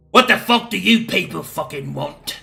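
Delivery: surly, gruff, hostile, unwelcoming officer voice. Voicing the lieutenant greeting the players as they come in: gruff lieutenant character voice. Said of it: "he'll say".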